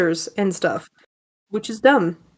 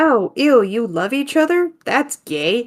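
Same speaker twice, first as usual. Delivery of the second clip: said sarcastically; 2 semitones higher than usual. Teasing another speaker whose boyfriend got them coffee: sarcastic. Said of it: "That was me being sarcastic".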